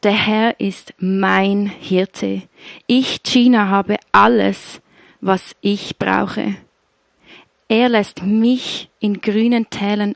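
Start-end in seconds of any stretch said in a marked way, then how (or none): 2.9-6.6 ich hit hard, deliberately stressed. Reading a verse with the name Gina inserted: strong stress on 'Ich'. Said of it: "Ich betone das ganz bewusst so über mir".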